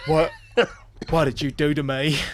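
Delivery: put-on southern US accent. Clowning around near the end of the show, speaking in a southern accent. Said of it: "You sounded more like Forrest Gump then".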